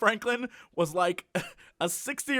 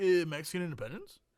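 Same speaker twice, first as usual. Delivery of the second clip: mock hesitant, clueless, unsure half-answer tone; 7 dB quieter than usual. Mocking people asked about Cinco de Mayo: imitating clueless people. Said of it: "they're like".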